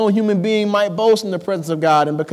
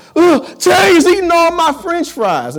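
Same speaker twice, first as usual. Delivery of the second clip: very high, shrill, loud screaming with wild swings; 11 semitones higher, 6 dB louder than usual. Telling how he got louder while you drove, imitating Duhan screaming. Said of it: "screaming even louder".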